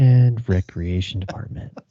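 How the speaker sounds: slow, buttery smooth radio host voice. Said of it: "Did I have that soothe?".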